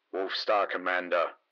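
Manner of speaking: low, flat, through clenched teeth. A defeated opponent addresses the Wolf Star Commander: low, flat, through gritted teeth. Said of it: "low and flat, as if through gritted teeth".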